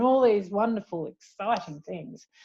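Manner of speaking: dry, sarcastic tone. Listing finance topics taught to financial planners: sarcastic. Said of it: "hear the sarcasm".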